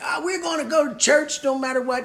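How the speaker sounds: high-pitched Southern Georgia preacher delivery. Talking about pastors who made the faith community look crazy, in a georgia pastor voice. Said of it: "Now I'm sounding like a Georgia pastor".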